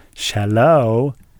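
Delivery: loud, cartoonish delivery. Showing how a character answered the phone: Sigmund Ooze voice. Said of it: "the way Sigmund Ooze used to answer the phone".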